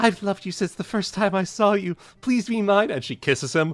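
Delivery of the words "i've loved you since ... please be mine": high, lifted-up cartoon pony voice. Retelling a comic line spoken by Fluttershy: Fluttershy voice. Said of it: "it's Fluttershy, and she's just like".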